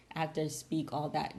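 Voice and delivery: ordinary talk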